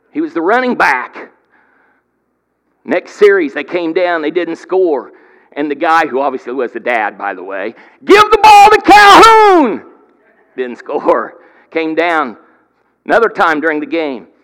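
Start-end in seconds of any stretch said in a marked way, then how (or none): 8.1-10.0 shrill, booming holler, very high and very loud. Retelling a joke about a dad in the stands: imitating a fan yelling. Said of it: "kept yelling".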